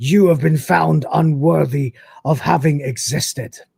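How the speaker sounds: put-on, menacing, monstrous, aggressive Scottish accent. Retelling a story, the Inquisitor condemns a man: booming monstrous Scottish voice. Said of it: "booming out this sort of monstrous, aggressive voice like this, but with a strangely Scottish accent".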